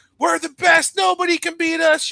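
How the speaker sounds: very high, loud shout. Retelling how the group shouted at everyone at the shows: imitating someone shouting. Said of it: "you're out there shouting at everyone".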